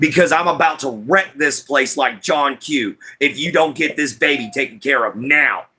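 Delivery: menacing, threatening tone. Retelling what was said to hospital staff: imitating own threatening words. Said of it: "I don't mean to be this kind of threatening".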